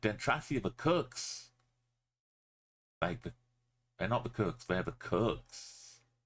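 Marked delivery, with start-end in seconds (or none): 0.0-1.5 play-acted very determined, insistent, emphatic, pitched up. Recalling how he said a line in a separate take: imitating a determined delivery. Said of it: "the way he very determinedly said".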